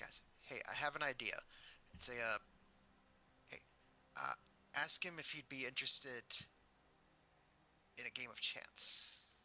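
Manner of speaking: conspiratorial whisper. A player voicing his character, whispering an idea to the group. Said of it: "and he just whispers".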